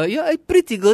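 very high motherly voice. Retelling his mother's usual compliment: imitating his Filipina mother. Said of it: "her biggest compliment usually is".

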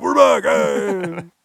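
very loud, hard, aggressive, forceful delivery. Showing how not to open the show: mock hard aggressive intro. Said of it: "come in all hard and aggressive".

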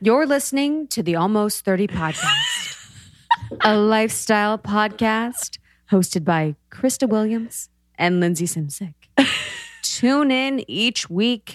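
deep, announcer-style belly voice, radio-like. A podcast host reads the show's intro in a radio voice. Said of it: "doing my radio voice".

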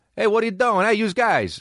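put-on New York Queens accent. Praising a British actor's performance, act out his role, imitating a guy from Queens. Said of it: "playing a guy from Queens".

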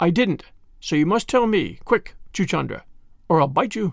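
usual speaking voice

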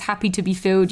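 plain

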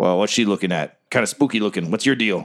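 sly gnomish voice. Voicing the gnome pulling the iron door open: sly gnome voice. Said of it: "this gnome is, he's a small dude".

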